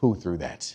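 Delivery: stern, serious, very low voice. Retelling confronting students who threw something: imitating his own serious voice. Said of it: "I get serious with them".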